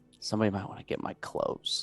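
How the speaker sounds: very quiet, breathy, barely audible whisper. A prisoner being taken out for transport, whispering. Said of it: "I'll just like kind of whisper".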